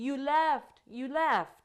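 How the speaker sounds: put-on loud, drawn-out scream of an upset little girl. Retelling how a little girl reacted after her shower: imitating a child screaming. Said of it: "She starts screaming".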